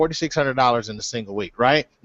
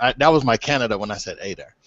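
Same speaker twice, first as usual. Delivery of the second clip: usual speaking voice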